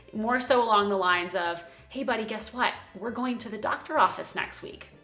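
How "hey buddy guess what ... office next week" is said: calm, easy-going, light, upbeat, neutral yet positive tone. Telling someone about an upcoming doctor visit, neutral but positive tone. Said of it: "a very neutral, but again, positive tone".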